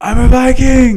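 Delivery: screamed, very high-pitched, very loud yell. Retelling a dare done from the side: retelling own yell. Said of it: "I started to yell".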